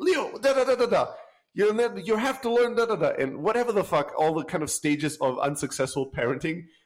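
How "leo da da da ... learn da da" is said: put-on angry voice, higher. Retelling how the parents spoke to their son, imitating an angry parent. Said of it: "And then you get angry".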